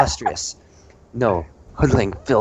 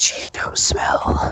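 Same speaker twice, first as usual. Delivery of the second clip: very slow, drawn-out whisper close to the ear. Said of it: "In your ear, close, whispering".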